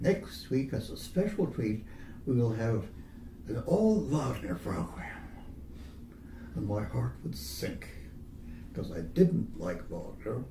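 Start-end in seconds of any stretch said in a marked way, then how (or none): 0.0-5.1 sweet-talking, wheedling, coaxing radio-announcer voice. Recalling a radio announcer at the end of a program, imitating a wheedling radio announcer. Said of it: "the wheedling voice of the radio announcer".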